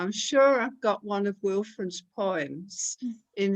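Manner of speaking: usual speaking voice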